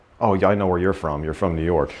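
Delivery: plain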